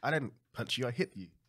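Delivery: ordinary delivery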